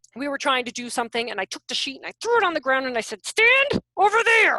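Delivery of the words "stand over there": mock, raised voice spoken through clenched teeth. A parent retells what she told her kid that evening; retelling talking through teeth. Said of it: "Talk through my teeth".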